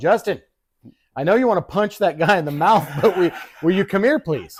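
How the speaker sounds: high, loud yell carrying over background noise. Retelling your mother calling you over across a bar: retelling mom's yell. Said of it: "my beautiful fucking mother yells across the bar".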